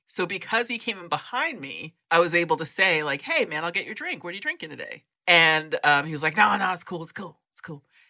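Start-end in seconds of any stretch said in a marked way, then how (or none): 6.3-7.8 put-on gruff voice. Retelling how hip hop royalty declined his offer at Starbucks, imitating a gruff voice. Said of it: "that gruff voice".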